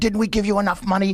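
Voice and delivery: high, furious screaming rant with swearing. Recounting a stand-up story of a mob guy yelling at a priest, retelling mob guy screaming. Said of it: "he's s- screaming and swearing as this mob guy".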